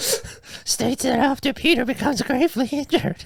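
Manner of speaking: very high, hoarse, squeaky elf voice. Reading an unofficial synopsis aloud, Dobby voice with sore throat. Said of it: "Sound like sound like Dobby with a sore throat".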